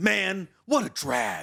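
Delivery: loud, very slow, drawn-out carrying voice. Comparing anime characters, imitating a line in a loud Shikamaru voice. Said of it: "Shikamaru still talks loud, but he's like".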